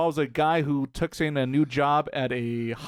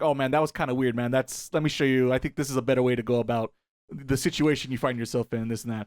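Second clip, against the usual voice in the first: ordinary talk, nothing marked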